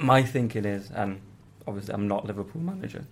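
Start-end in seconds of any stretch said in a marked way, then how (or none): 0.9-3.0 voice breaking and cracking on the words. Speaker giving a view on Gomez being out, voice cracking. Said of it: "voice cracking".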